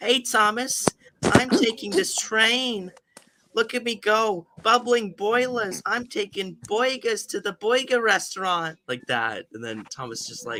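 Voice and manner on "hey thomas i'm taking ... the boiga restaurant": put-on high, slow, drawling New Jersey accent. Describing a joke for a dub, the speaker voices Henry with a New Jersey accent. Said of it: "inexplicably has his New Jersey voice where he's like".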